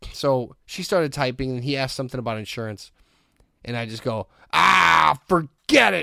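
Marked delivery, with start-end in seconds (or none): 4.5-6.0 put-on very loud, rough old-movie thirties gangster blurt. Retelling walking out of an office: own loud 1930s tough-guy outburst. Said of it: "real loud, like I was in, like, a thirties band".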